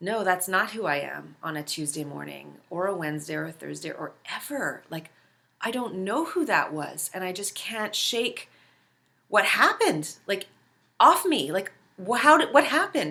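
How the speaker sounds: play-acted earnest, deeply felt, soulful, heartfelt tone. Retelling what she said while holding wrists: imitating soulful speech. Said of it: "very soulfully said".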